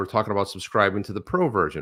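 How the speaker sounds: plain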